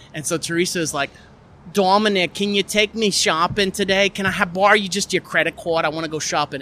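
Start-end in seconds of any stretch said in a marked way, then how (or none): 1.7-6.6 put-on New Jersey accent. The speaker performs one of two made-up characters: Teresa's New Jersey accent. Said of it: "they're from New Jersey, I guess. So they have this accent".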